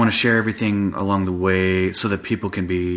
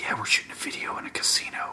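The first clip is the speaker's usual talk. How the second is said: put-on quiet mutter under the breath. Retelling how he would hint at things: imitating muttering under breath. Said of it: "under his breath".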